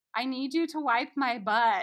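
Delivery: put-on very loud, high child's yell. Retelling how a child repeated a request: imitating a child saying it louder. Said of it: "louder, 'cause I wasn't acknowledging him".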